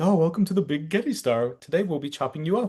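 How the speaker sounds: upbeat, excited game-show host voice. Imitating a robot in the Japanese version: imitating an excited TV show host. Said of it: "excited, like, T V show host kind of energy".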